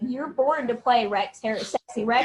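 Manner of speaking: normal talking voice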